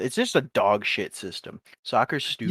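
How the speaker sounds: ordinary talk, nothing marked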